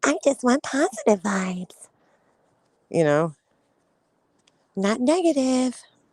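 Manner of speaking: put-on high, little, childlike baby-talk voice. Speaker imitating how a woman finishes after yelling at people, in a mocking baby voice. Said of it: "she has to do the baby voice".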